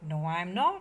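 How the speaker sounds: plain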